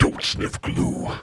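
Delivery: ominous, foreboding voice. Describing a voice heard in your head, the speaker uses an ominous tone. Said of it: "you hear this ominous tone".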